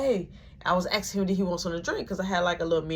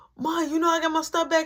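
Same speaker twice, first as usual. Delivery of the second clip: mock overjoyed, very high-pitched excited shout; 10 semitones higher than usual. Retelling a brother who got his room back: imitating someone yelling excitedly. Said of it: "so he yelling".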